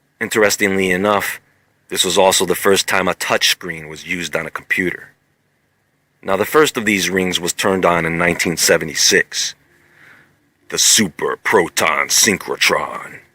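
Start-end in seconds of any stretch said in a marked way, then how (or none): 10.7-13.1 deep voice, lower and slower. Presenter telling the folks the name of the first ring, in a deep voice. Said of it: "you gotta say that with a deep voice".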